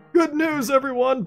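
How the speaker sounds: put-on high-pitched old man voice. Playing a character named Farnsworth in a scene, Farnsworth old-man voice. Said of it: "old man voice".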